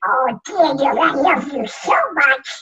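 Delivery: quacking voice, way up high. Retelling bedtimes, the speaker quotes his mom tucking him in, Donald Duck voice. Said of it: "Donald Duck was the very first voice".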